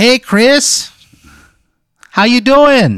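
very high, loud, swooping, terrible put-on Midwestern accent. Acting out a gum-chewing woman greeting Chris, in a terrible Midwestern accent. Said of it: "she sounds like just a Midwestern".

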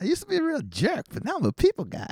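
very high comic voice, swinging pitch way up. Doing the promised impression of Bobcat Goldthwait after being urged on. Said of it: "my Bob Goldthwait impression".

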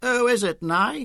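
very high, strident Australian woman's call. A woman asks Naomi who is at the door, in a strident Australian accent. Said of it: "a woman's voice with a strident Australian accent".

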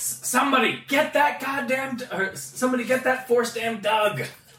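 high-pitched screaming. Narrating a tabletop scene, the speaker voices the Rhodian with slightly higher-pitched screaming. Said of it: "You hear the Rhodian in a slightly higher pitch voice. Screaming".

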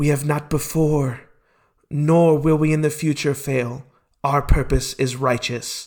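hushed, whispering voice. Voicing one of three beings heard in a vision: whispering. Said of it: "they're whispering".

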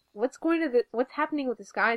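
ordinary talk, nothing marked

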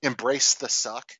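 plain

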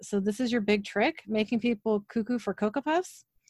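ordinary delivery

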